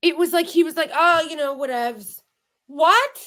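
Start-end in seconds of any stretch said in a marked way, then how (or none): 0.9-2.2 play-acted nonchalant, dismissive, offhand tone. Retelling how he reacted without freaking out: imitating someone unbothered. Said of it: "he didn't even freak out".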